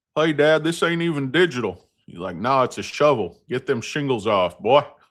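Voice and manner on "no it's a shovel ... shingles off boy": put-on Deep South man voice. Speaker retells his dad's reply to him as a boy, Deep South dad impression. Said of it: "we were down in the deep south".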